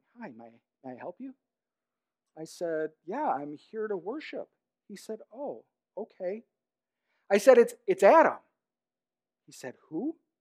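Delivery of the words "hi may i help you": very quiet, low, hushed half-whisper. Retelling a man greeting him as he arrives to worship, half-whispering. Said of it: "He's whispering".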